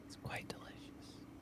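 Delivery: whispered ASMR style. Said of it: "I'm gonna whisper it again".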